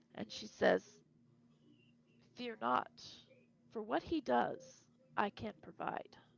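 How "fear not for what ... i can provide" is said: very soft, gentle feminine whisper. Voicing a presence that lays a hand on a player's shoulder: soft feminine whisper. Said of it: "you hear a whisper that says, and it's feminine, it's very soft".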